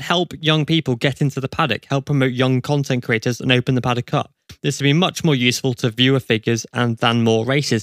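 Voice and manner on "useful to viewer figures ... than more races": normal talking voice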